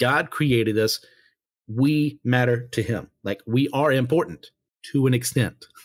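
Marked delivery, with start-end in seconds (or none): 3.5-5.7 a beat of silence, then "to an extent". A speaker points out his own phrasing, with a pause before 'to an extent'. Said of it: "Notice the pause there".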